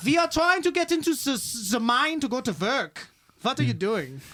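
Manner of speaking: put-on German accent. Acting out miners confronting a man at the mine, in a german accent. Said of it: "I guess you got to do it in an Irish or uh, German accent".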